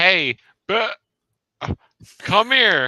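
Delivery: everyday loud yell. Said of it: "Just yell, like".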